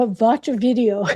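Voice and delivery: put-on accent, v for w, watch as vatch. Telling Michelle how she opens YouTube, speaker imitates her mom's immigrant accent. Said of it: "I'm talking like my mom".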